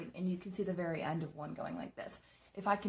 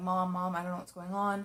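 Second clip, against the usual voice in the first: mock upset, tearful voice, crying through the words; 5 dB louder than usual. Retelling calling Mom after a scare: imitating own past crying. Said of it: "I'm in tears".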